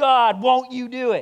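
very high, very loud, very slow, drawn-out cry. Recalling standing up while reading a report, retelling a yell. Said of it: "started yelling".

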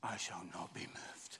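quiet, slow whispering.

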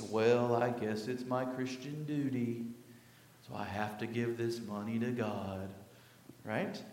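mopey, gloomy voice dropped low and dragged out. Talk on giving, acting out a reluctant giver in Eeyore voice. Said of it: "not saying with your Eeyore voice".

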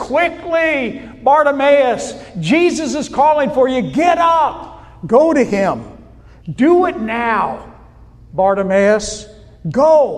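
mock insistent, urgent, pressing tone. Retelling how people told a blind man to go to Jesus: retelling an urgent call. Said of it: "they probably did it in an urgent voice".

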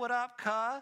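high, casual, street-style yell. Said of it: "I yell".

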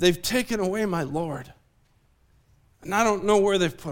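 put-on pained, anguished voice. Retelling the woman's answer to the angels at the tomb, acting out a pained voice. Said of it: "you can hear the pain in Mary's voice".

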